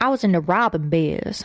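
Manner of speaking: put-on speaking with a Southern American accent. Quoting a woman who has a Southern accent, in a Southern accent. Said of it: "she's got like a southern accent, so she'd be like".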